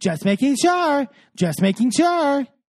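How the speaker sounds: high, patronizing, talking-down tone. Retelling a reality show argument, imitating a condescending tone. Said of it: "very, like, condescending".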